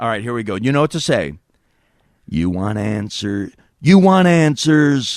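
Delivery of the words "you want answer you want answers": slow, deliberate delivery leaning on every word. Doing a favorite impression, quoting a movie line: Jack impression. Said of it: "It only works as Jack".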